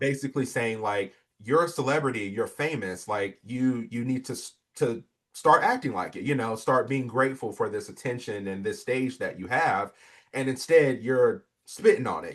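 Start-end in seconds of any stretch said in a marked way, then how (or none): none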